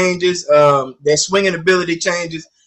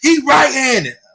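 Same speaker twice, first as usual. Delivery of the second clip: mock hollering, much higher; 8 semitones higher than usual. Telling a story about fitting a kid's glove, acting out his mom hollering. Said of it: "his mom hollering out".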